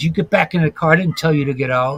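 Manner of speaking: put-on rude, jerk-like voice. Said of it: "being a real jackass".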